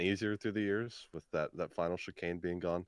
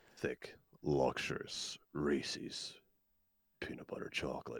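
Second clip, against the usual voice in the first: hushed, breathy, seductive voiceover, soft, close to mic; 5 semitones lower, 5 dB quieter than usual. Told they could have a career in commercials, doing a Will Arnett Reese's ad voice. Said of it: "Does that turn you on?".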